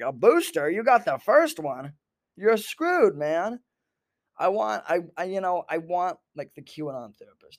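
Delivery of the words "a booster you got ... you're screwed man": put-on country accent, higher. Speaker acting out an imagined QAnon therapist's reply, in a country accent. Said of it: "giving him like, you know, a country accent".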